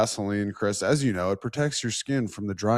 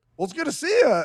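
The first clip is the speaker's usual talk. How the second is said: put-on Australian accent, pitched very high; 5 dB louder than usual. Retelling a locker room greeting from a teammate: imitating australian accent. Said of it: "in his Australian accent".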